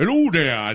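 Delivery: put-on caricatured old-style dialect voice. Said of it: "that's what they talked like".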